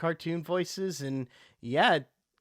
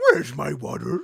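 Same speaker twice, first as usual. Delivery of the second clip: loud, rough-edged cartoon-dog voice; 2 semitones lower, 5 dB louder than usual. Retelling a TV scene about a dog talking: Scooby-Doo voice. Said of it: "Like Scooby-Doo".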